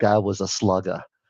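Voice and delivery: imitated New York accent. Remembering your father talking about a baseball player, you repeat his comment in a New York accent. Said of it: "my dad in his New York accent".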